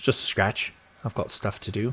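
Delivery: hushed, soft, bad English accent. Quoting a viewer comment, redoing Alfred's line in a bad English accent. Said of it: "That was very bad again".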